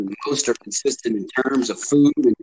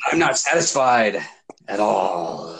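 hammed-up, slow, drawn-out, dramatic delivery; 3 semitones lower than usual. Reading aloud a message a guy wrote, with mock-dramatic acting. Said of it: "Dramatic acting".

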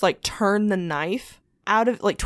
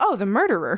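mock offhand, completely matter-of-fact plain delivery. Retelling what one of the sisters said in the kitchen: retelling a matter-of-fact line. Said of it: "Like, completely matter of fact".

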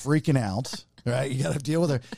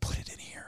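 soft, hushed whisper. Retelling how she told him to trap the animal: imitating someone whispering. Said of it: "still whispering".

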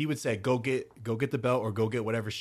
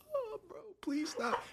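mock very high, soft, tearful, crying pleading tone; 8 dB quieter than usual. Acting out his past self begging the man to stop, crying. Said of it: "and I'm just crying, bro".

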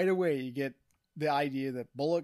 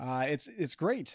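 plain

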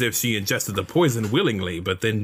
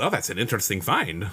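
put-on Spanish accent, character voice; 3 dB quieter than usual. Voicing a character's reply for the group, in a Spanish accent. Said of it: "tell me whenever this Spanish accent gets offensive".

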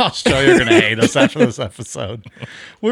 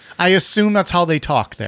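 usual speaking voice

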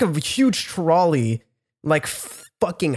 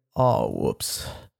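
soft, totally unbothered, laid-back, super chilled tone; 6 dB quieter than usual. Retelling how the guy behind the trash trolley came out, imitating a super chilled guy. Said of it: "comes out like fucking super chilled".

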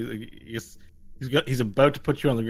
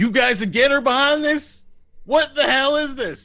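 very high-pitched, loud yelling; 7 dB louder than usual. A game master voices the sheriff calling up to the players: Sheriff Randy Clementine yelling up. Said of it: "And he's yelling up at you".

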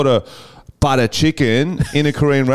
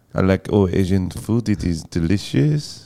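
put-on French accent; 6 semitones lower, 3 dB quieter than usual. Asked which accent a line would sound good in: French accent.

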